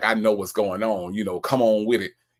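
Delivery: mock, assertive, swaggering older hustler voice. Imitating how a man talks to Sonya: imitating an old pimp manner. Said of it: "he sounds like the pimp, the old pimp from the block".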